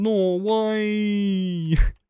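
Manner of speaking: put-on Australian accent. Speaker recalling a Norway joke, saying it in an Australian accent. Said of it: "That literally sounds like an Australian saying no way".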